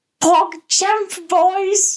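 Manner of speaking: very high, loud, squealing British voice. Offering to imitate a Minecraft YouTuber, Tommy impression. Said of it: "I can do a Tommy impression too".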